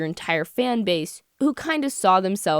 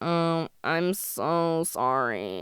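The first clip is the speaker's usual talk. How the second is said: heavy, low vocal fry creaking through words; 4 semitones lower, 5 dB quieter than usual. Imitating a guy saying sorry, in creaky vocal fry. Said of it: "Let me do the vocal fry".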